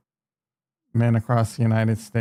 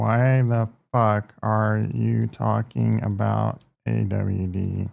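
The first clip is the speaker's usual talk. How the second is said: ordinary talk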